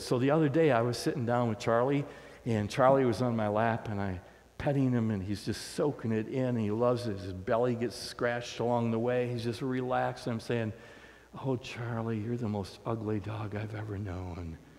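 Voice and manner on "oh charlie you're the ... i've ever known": soft, gentle voice. Retelling talking to a relaxed dog on the lap: soft voice. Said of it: "I'm just speaking in a soft voice".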